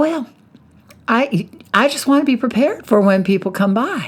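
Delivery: put-on Southern accent. Retelling what a college roommate said about her desk: imitating a southern accent. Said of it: "She had a Southern accent".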